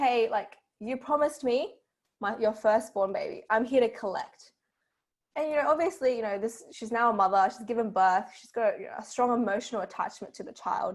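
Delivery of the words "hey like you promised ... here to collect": normal talking voice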